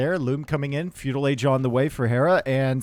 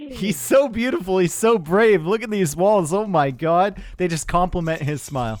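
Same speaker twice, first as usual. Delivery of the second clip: high, sarcastic gushing, mock admiration laid on; 5 semitones higher than usual. Praising a player's walls after admitting to sarcasm: mock admiration, sarcastic. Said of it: "I was saying that sarcastically".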